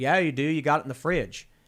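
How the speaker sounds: solid, put-on Kentucky accent. Retelling how a Kentucky guy asked for a Coke, imitating a Kentucky accent. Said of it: "your Kentucky accent is pretty solid".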